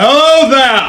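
booming, very loud and high voice. Calling out to a man who ignores you, voice magically boosted. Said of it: "I use thaumaturgy to boost my voice".

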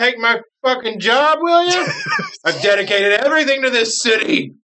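put-on very high, drawn-out, drunken, furious rant. Voicing a drunk captain leaving, dragging a head: drunk captain's angry rant. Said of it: "you just hear him going, like".

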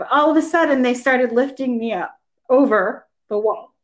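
tearful, close to crying, emotion welling up. Telling a personal story to a listener, near tears. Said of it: "I'm going to cry now".

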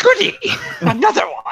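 eager, sing-song, shrill, very high, very loud cry. Narrating a scene, a character called Doc is brought another kid: excited. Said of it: "he jumps up excitedly and claps his hands".

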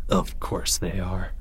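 slow, soft mutter, half to himself. Leo answers Timmy's report of another attack, muttering. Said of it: "muttered Leo".

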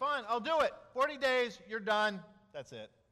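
loud, resentful, grudging, curt proclamation tone. Voicing Jonah preaching while stomping through the city: grudging. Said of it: "I can just see him stomping through the city".

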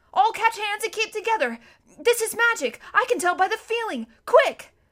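urgent, loud, high-pitched shout. Narrator reads Edmund calling to Lucy and Susan as the magic pulls them, shouting. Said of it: "shouted Edmund".

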